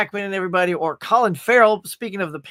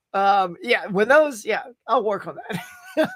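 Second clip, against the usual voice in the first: ordinary talk, nothing marked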